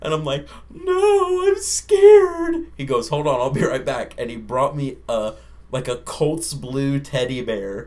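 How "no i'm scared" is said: very high, very loud bawling wail. Speaker retells answering a cop who asked if they were okay, crying like a baby. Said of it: "i'm crying like a baby".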